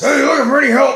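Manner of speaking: very high, loud, rough gravelly voice. Retelling picking up a call from a repeat caller, gravelly voice. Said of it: "and this gravelly voice".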